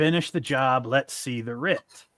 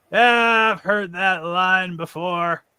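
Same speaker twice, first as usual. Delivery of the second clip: high-pitched shouted line; 5 semitones higher, 3 dB louder than usual. Narrating the guildmaster coming in through the door, shouting. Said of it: "he comes in and shouts".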